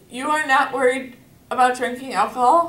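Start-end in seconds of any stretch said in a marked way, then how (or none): none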